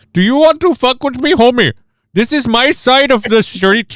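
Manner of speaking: very high put-on Indian accent, dubbed-film style. Imagining a game voiced by Bollywood actors, acting a street thug: Bollywood-style voice acting. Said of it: "voiced by, like, Bollywood".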